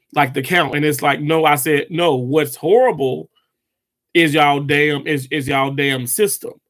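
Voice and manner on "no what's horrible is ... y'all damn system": ordinary delivery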